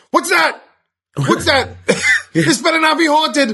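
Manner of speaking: put-on frightened screaming, very high, rising. Recalling the other speaker being heard from the cornfield: retelling loud screaming. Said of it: "you were screaming so loud".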